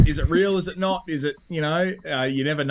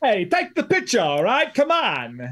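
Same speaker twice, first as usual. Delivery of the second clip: high voice swooping and bouncing around; 6 semitones higher than usual. Answering what a game character would sound like: Tony Snap voice. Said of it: "what would he sound like, do you think?".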